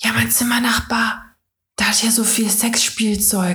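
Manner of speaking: theatrical whisper. Speaker retells a grandfather in rehab phoning and whispering, imitating a whisper. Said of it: "warum flüsterst du denn?".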